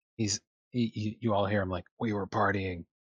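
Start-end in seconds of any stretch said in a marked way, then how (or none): 2.0-2.8 very low, faint voice, faster. Narrator voicing a character sneaking down the hallway, very low, faint tone. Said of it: "a very low, faint tone".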